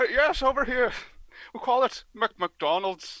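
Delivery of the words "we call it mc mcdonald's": slow put-on Scottish accent. Saying a word the way it is said over here: Scottish accent. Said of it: "I went into Scottish there".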